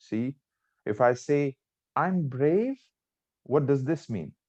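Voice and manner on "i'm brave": high, rising, confused and nervous tone. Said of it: "confused, nervous".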